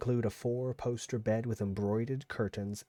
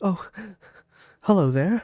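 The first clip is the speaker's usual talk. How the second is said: put-on very loud, high, sniffling ghost voice; 8 semitones higher, 11 dB louder than usual. Voicing a sniffling ghost turning to greet a player: sniffling ghost voice. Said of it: "it sniffles".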